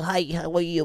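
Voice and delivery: put-on small, cooing baby-talk voice. Showing how someone might talk to their little dog, little baby voice. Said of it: "Like little baby voice".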